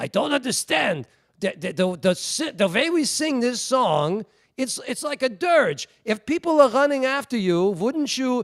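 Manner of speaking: put-on broken Yiddish accent, very high and slow. Imitating the ordaining rabbi telling an aside: old Yiddish accent. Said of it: "in his old Yiddish accent".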